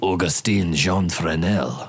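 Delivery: name pronounced the proper French way. Naming the French inventor of the lens, use a French accent on the name. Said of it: "you must say it like a Frenchman".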